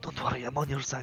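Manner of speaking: whispering. Leaning over it to speak to it, whispering. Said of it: "I lean over it like whisper".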